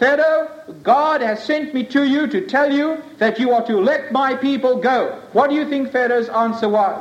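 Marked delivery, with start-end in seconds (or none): none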